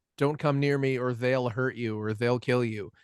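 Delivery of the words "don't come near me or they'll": plain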